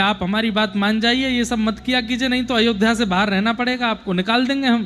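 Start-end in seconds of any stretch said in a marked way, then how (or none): none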